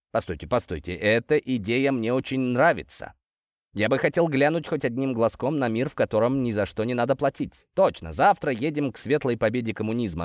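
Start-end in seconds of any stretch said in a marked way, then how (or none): none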